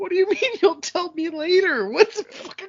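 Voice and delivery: high, strained, mock outraged voice.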